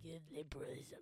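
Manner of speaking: storybook witch character voice. Imitating how the other speaker says a word: witchy voice. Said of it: "you sound like a witch when you say it".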